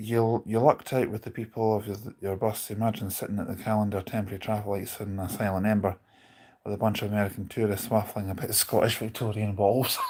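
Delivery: normal talking voice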